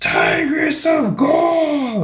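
very high, projecting, swooping arena announcer call. Retelling how the man projected over 50,000 cheering people: projecting announcer call. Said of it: "And he's just like".

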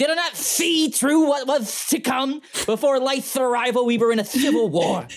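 very high, lisping cartoon cat voice. Asked to do a voice without a line in front of him, Sylvester the Cat impression. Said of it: "I could do Sylvester".

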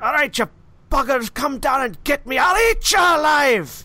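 very high, far-off shout with an echoey sound. Voicing a distant figure yelling at creatures: distant echoing yell. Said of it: "you hear somebody yelling at something".

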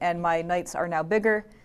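ordinary talk

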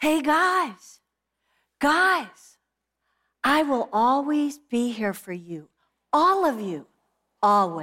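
put-on little kid calling out, guys drawn out. Speaker retelling what a small boy yelled from his car seat, imitating a little kid yelling. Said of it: "we hear his little voice from the car seat yell out".

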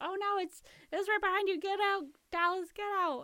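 very high, terrified, shrieking scream. Retelling a film scene where a character warns dallas: imitating someone screaming. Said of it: "And she's screaming".

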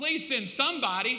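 loud, high begging. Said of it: "Here's this dude begging".

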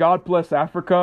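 normal talking voice

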